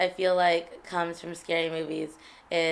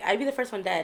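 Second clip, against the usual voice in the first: ordinary talk, nothing marked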